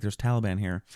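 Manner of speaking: plain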